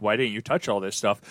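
ordinary delivery

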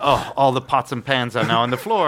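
ordinary talk

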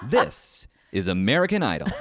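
booming, very loud TV show announcer voice. Asked to say the show's tagline for the others; American Idol announcer voice. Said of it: "What announcer voice you got".

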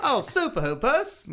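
very high, shrill, loud fake Australian accent. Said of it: "read the question in Australian accent".

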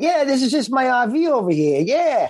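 fake, played-up New Jersey accent. Acting out a character showing his RV when asked: put-on New Jersey accent. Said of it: "in your accent".

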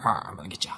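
soft, hushed, menacing villain whisper.

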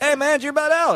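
bright, upbeat, very high-pitched tone. Showing how the question should sound: smiling, higher-pitched delivery. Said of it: "put a smile on your face or some higher pitch in your voice".

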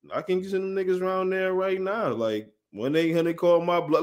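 usual speaking voice

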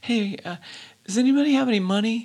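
put-on very quiet voice. Retelling a musician's bit on stage between songs, imitating him talking real quiet. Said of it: "he's real quiet like this".

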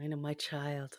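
quiet, soft acted voice. A speaker recalls a hated show character, doing Kai Winn's soft voice. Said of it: "With that soft voice".

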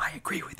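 barely voiced, hushed, confiding whisper. Retelling how big directors came up and agreed: imitating a whisper. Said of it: "come up and whisper to me".

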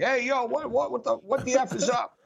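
light, held-back holler. Retelling shouting into a live press box mic: retelling a scream.

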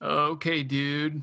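laid-back surfer-dude voice. Suggesting a voice for the co-host's reading, in a Spicoli voice. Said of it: "No, that's Spicoli".

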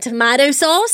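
put-on Australian accent. Repeating a phrase after hearing about Australian sauce: put-on Australian accent. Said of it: "my Australian accent has gotten".

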